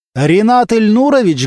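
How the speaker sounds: loud, high call-out. Kostya calls up to the engineer on the balcony: calling out loudly. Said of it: "громко отозвался Костя".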